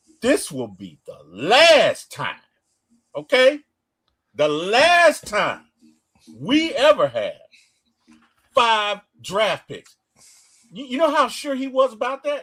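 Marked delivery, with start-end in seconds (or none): 0.2-10.0 acted, loud, deliberate, with attitude, last part stretched. Retelling what the GM said first: imitating someone saying it with attitude. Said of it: "he said it with attitude".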